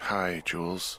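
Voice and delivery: worn-out, drowsy, sleepy, tired voice. Answering Julia's greeting, sounding tired. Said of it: "you sound tired".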